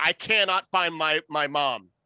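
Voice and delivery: loud, panicked, frantic begging. Playing a lost cub begging a guard for help: frantic plea. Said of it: "run up to him frantically and just be like".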